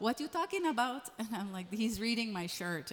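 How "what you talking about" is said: nosy, prying, intrusive tone. Retelling a mother barging in to ask questions: imitating nosy Middle Eastern mom. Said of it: "my mom, Middle Eastern, a little nosy".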